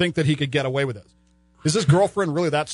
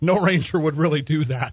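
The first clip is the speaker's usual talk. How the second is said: put-on sarcastic voice. Retelling what the other speaker's friend said: imitating a friend's sarcastic tone. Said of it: "sort of sarcastically goes".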